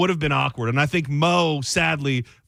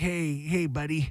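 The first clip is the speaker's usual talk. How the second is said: put-on gentle elderly man's voice; 7 dB quieter than usual. Describing an old man who can't reach his back asking for help: imitating an old man. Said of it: "it's an old man ... he's like".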